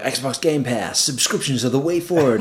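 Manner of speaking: awful, bad fake American accent. Discussing Sony and Xbox, a British speaker slips into a bad American accent. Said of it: "I don't know why I did that accent".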